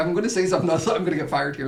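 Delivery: ordinary talk, nothing marked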